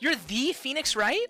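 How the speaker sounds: put-on girlish voice. Acting out a scene meeting Phoenix Wright, in a put-on girl voice. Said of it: "I'm gonna do a girl voice".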